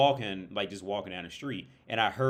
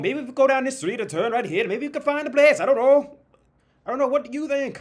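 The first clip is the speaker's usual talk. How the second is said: mock Australian-mixed accent, higher, louder; 10 dB louder than usual. Showing the accent used the whole time out, put-on accent mixed with australian. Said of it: "now I'm like mixing it with like a bit of Australian".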